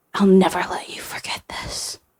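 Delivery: hissing. Reading a story: a bleeding, wounded man hisses at Frank. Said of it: "he hissed at Frank".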